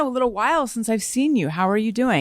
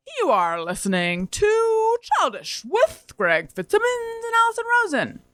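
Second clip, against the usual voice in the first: very high on-air radio announcer voice; 11 semitones higher than usual. Showing how the speaker's dad sounds doing his announcer voice, imitating dad's announcer voice. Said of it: "I could be an announcer voice".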